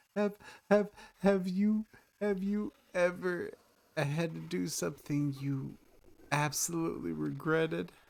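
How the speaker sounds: very high, halting, weeping, sobbing voice. Voicing a sobbing character asking a question: crying NPC voice. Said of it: "She's just crying".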